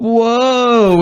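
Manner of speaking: put-on whoa, very high and drawn-out. Voicing a character who pretends to trip: fake startled whoa while tripping. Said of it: "And then he goes".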